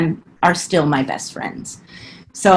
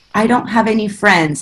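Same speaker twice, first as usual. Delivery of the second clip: put-on shaky, quavering, trembling and nervous voice; 3 semitones higher than usual. Retelling telling her teacher advisor she had no friends, imitating shaking while speaking. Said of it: "I was shaking".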